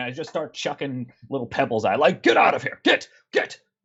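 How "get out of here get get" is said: very high, shrill yelling. Player in a tabletop game chucks pebbles at a creature, yelling at it. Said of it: "I'm going to shout".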